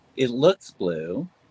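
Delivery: slow, unsure, hedging delivery. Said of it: "You don't sound so sure".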